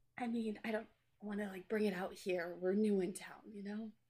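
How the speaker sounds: soft, hushed half-whisper. Half-whispering in character to Bear about being new in town: half-whispering in character. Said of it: "I just whisper to Bear".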